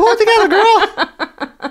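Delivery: voice shot way up, very high-pitched. Raising the voice two octaves for the bit: high-pitched voice. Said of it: "As I raise my voice 2 octaves".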